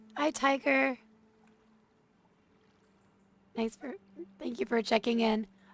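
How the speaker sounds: high squeaky sound. Greeting a viewer during a quick stream: sick squeaky voice. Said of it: "so I have a squeaky voice".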